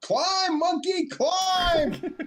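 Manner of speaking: very high hollering, drawn out, climbing in pitch. Calling back in character while running up a ladder: yelling in character. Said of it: "I'm yelling back".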